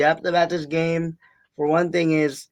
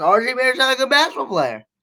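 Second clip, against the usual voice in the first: put-on, tongue-in-cheek sarcasm, high swooping tone; 8 semitones higher than usual. Claiming a player is bad while not meaning it: put-on sarcastic tone. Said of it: "I'm just being sarcastic here".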